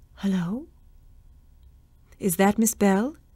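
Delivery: sleepy, faint, distant-sounding whisper. Answering a call on the extension, she whispers faintly and sleepily. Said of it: "a faint, sleepy voice, distant and yet clear, whispered".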